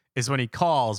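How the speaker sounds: usual speaking voice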